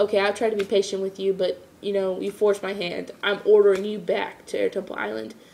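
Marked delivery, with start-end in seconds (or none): none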